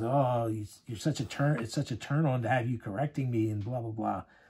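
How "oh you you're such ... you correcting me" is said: plain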